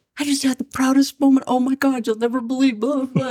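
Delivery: high, near-tearful voice, on the verge of crying. Retelling a proud phone call at work: imitating someone almost crying. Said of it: "he was almost, like, crying".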